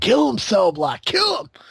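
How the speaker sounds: very high, swooping scream. Recalling screaming at a wrestler during his match, retelling a scream. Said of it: "I just kept screaming it".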